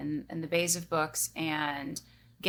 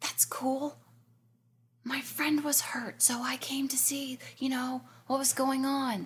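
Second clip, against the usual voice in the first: hushed whisper, higher pitch; 8 semitones higher than usual. A character not supposed to be here explains to Leah, whispering. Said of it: "for all intents and purposes, I'm whispering".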